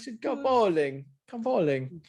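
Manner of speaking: bad European accent. Retelling how a guy used to phone about going bowling; bad European accent. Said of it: "I can't do that European accent".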